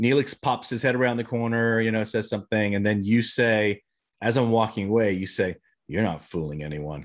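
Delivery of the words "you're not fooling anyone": under the breath, much lower, quieter. Quoting the other person's line in a scene as the speaker walks away, muttered under the breath. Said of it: "kind of under your breath like that".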